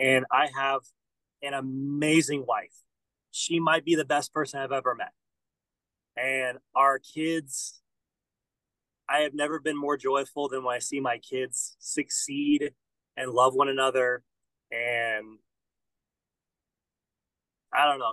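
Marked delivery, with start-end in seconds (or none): 6.2-18.1 choked-up, emotional voice. A husband and father speaking about his family, choked up. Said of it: "Sorry, I'm getting a little".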